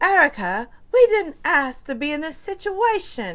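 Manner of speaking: put-on Southern voice straining at British accent, loud and high. Imitate Dorit speaking to Erica, in Dorit's fake British accent. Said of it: "She's fronting with this British accent".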